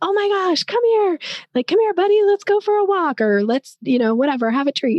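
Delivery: very high, swooping, fun, excited dog-calling voice. Explaining how people call a dog to get its attention: high-pitched excited dog-calling voice. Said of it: "high pitched, really fun, excited voice".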